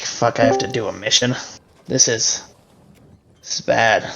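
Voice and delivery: soft, weary sigh through the words. Voicing a character who has just been given his first assignment, sighing. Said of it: "He's gonna sigh again".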